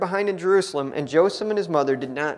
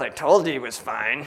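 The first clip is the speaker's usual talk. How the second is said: mock, acted-out mumbling under breath; 4 semitones lower than usual. Speaker imagining the father's aside when the boy turns up: mock mumble under breath. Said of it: "mumbles under his breath".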